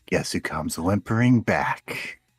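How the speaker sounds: whispering in the ear. Voicing a figure who speaks into a player's ear: whispering in the ear. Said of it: "You hear a whisper in your ear".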